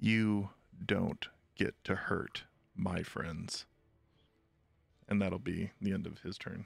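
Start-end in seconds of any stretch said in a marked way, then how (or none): 0.0-3.7 slow, deliberate whisper. Speaking in character from behind an enemy: whispering. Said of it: "I just whisper behind him and say".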